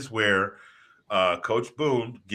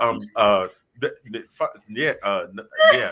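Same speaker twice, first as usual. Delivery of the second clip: imitated flustered, tongue-tied stutter, louder; 6 dB louder than usual. Imitating an actor stunned after being yelled at: imitating flustered stammering. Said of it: "which is why he's like".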